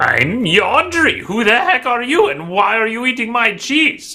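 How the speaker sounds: put-on wizened, crackly, high-pitched old man voice. Voicing the old dwarf yandri answering a halfling: crackled, old, wizened-sounding voice. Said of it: "a crackled, old, wizened-sounding voice call out".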